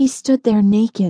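plain reading voice

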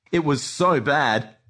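ordinary delivery

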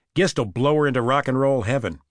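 plain

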